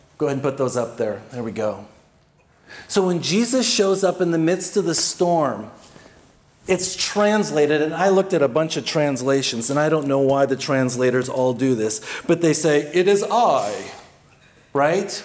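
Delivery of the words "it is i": stiff, almost stilted, kind of British delivery. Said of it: "A very kind of British, you know, almost stilted".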